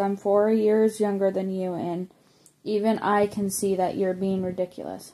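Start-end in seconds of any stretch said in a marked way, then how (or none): none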